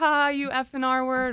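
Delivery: acted mocking laughter. Retelling a road rage argument, imitating laughing while insulting. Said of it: "'cause I'm laughing at him".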